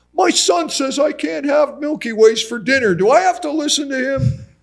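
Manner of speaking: mock very high, loud, motherly voice. Speaker retells his mom speaking in the doctor's office, imitating mom's loud voice. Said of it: "in this loud voice".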